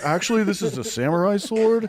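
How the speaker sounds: very high-pitched, shrill, drawn-out pedantic voice. Acting out a guy correcting that his sword is samurai: put-on voice of a pedantic guy. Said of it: "he's gonna do the voice too".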